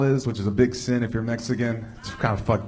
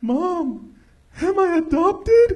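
put-on crying child voice, very high, very slow, drawn-out; 4 dB louder than usual. Retelling running to mom as a child: imitating own childhood crying. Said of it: "running to my mom in tears, just crying".

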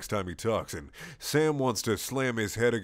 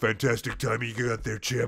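husky, aroused, otherwise normal voice; 2 semitones higher than usual. Reading a story aloud, voicing Dean: husky aroused Dean voice. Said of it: "in a husky, aroused but thankfully normal and one hundred percent Dean voice says".

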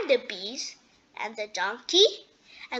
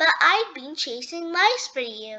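ordinary delivery

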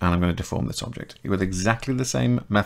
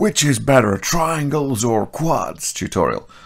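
put-on American accent. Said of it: "I don't know why I went American".

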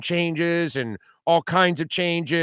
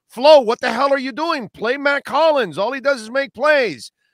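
pitched-up, heckling, jeering shout; 8 semitones higher, 4 dB louder than usual. Retelling yelling at the coach all season: imitating his own screaming. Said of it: "I was screaming at the top of my lungs".

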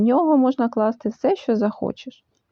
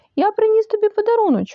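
very high, delighted, joyful exclamation; 10 semitones higher than usual. Narrator reading a character calling out to a friend: joyfully exclaimed. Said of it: "радісно вигукнув Пух".

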